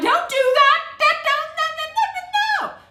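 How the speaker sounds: put-on very high yelling of repeated "no". Retelling watching a mother get poisoned: retelling own yelling at the screen. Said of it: "all kind of times that I'm yelling".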